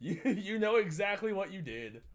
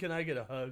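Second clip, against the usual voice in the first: mocking put-on voice, lower; 3 semitones lower than usual. Reacting to a clip, imitating the guy asking for a hug: mocking imitation of the guy. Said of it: "He's like".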